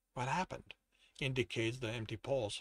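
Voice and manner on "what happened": hushed, quiet voice, lower and quieter. Reading a story, voicing the captain as he reaches the narrator: hushed tone. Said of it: "speaks in a hushed tone".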